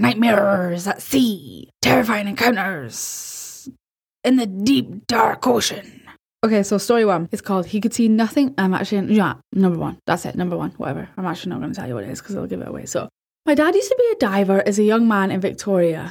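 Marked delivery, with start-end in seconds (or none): 0.0-6.0 put-on pirate voice, much slower. Announcing the title before telling the first story, in a pirate voice. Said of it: "Maybe I should do the voices in a pirate".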